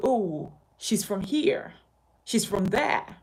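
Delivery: ordinary talk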